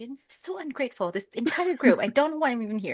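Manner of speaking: irritable, disgruntled grumbling to herself. Game master voicing a character, grumbling under her breath. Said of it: "she's grumbling under her breath".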